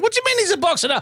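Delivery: yelling, shouting.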